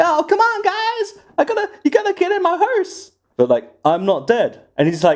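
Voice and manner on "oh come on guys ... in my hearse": very high cartoon cowboy voice. Asked to do Tom Hanks, the speaker tries him as Woody: Woody voice. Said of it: "does he sound like Woody?".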